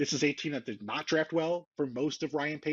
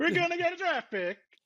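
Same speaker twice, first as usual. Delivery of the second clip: put-on Italian accent, pitched up; 14 semitones higher, 3 dB louder than usual. Repeating another speaker's line about a draft pick: imitating a friend's italian accent. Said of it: "an Italian accent from Dominique".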